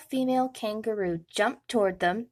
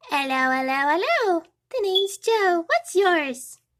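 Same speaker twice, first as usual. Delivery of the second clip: tiny, cheerful little squeak, rising high; 7 semitones higher, 4 dB louder than usual. Narrator reads a baby kangaroo introducing himself, squeaking happily. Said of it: "he squeaked happily".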